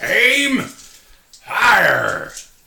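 shrill, booming, very loud, high pirate shout. In a game, calling out a command, pirate voice. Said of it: "It's fire, but I do it in my pirate voice".

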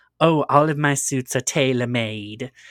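play-acted haughty, well-to-do, very snobbish boastful voice. Retelling a movie scene, quoting a character's reply: snobbish Mrs Mason voice. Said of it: "very snobbishly".

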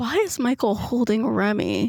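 softly spoken, hushed. Retelling what he very softly said during the game: very soft. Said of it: "very softly goes".

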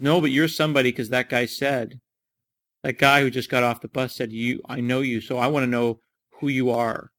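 ordinary talk

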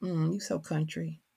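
put-on dismissive voice. Retelling how educated peers react to a country accent: imitating a dismissive remark. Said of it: "that sort of dismissive".

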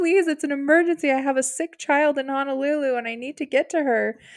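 acted tearful, desperate voice breaking through sobs. Retelling how a woman pleaded with a man citing company policy: imitating someone crying. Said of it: "she starts crying immediately".

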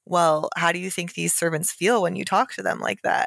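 ordinary talk

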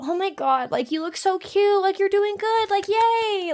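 put-on patronizing sugary cooing, very high. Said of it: "changed their entire tone with me".

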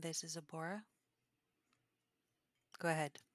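hushed, whispered voice. Game master voicing a figure who whispers to the players, whispering. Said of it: "I whisper to them".

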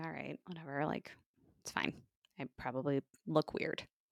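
quiet, hushed murmur.

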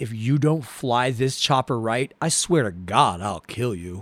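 low, deep, quiet, threatening baritone. Retelling a scene to the others, doing Galt's deep baritone voice. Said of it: "his deep baritone voice".

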